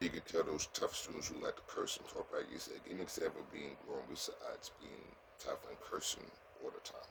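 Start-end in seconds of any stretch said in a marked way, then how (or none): none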